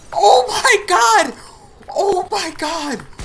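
high, slow, drawn-out screaming, each word stretched out.

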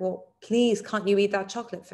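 imploring, beseeching, begging, pleading tone. Retelling how dad pleads for her to eat chocolate: imitating dad begging. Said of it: "he's just begging me".

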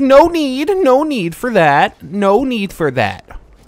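very high, loud, slow, deliberate, drawn-out scolding tone. Retelling how a teacher stopped kids: imitating an elementary school teacher. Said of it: "She'd be like".

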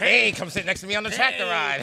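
creepy, leering voice. Picturing himself apple picking near kids: playing a creep. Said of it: "that'd be mad creepy".

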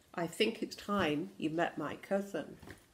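ordinary delivery

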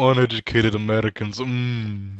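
teasing, put-on Canadian accent. Joking about what Canadians say of Americans: put-on mocking Canadian. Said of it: "I would do that all the fucking time".

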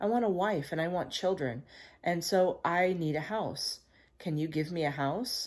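ordinary delivery, nothing marked

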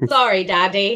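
poor attempt at a put-on Irish accent. Apologizing to the Irish as a joke: failed attempt at Irish accent. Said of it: "That wasn't Irish at all".

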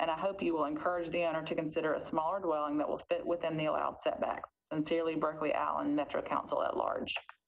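ordinary delivery

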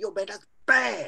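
all-in, punchy, emphatic, full-body delivery. Explaining how intonation changes a word's meaning, the speaker demonstrates; emphatic intonation. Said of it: "And then I get my body into it".

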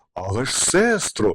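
embarrassed, flustered. Narrator voicing Winter addressing Goldenhair as her sister: embarrassed, flustered. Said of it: "зніяковіло промовила зима".

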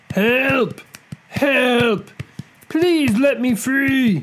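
very high, drawn-out, pained crying. Narrator reads someone by the river, heard by a buffalo, crying out in pain. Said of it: "the voice of someone crying in pain".

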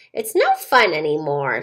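low, swooping grumble, muttered to herself. Narrator voicing the bored Tooth Witch, grumbling. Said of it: "she grumbled".

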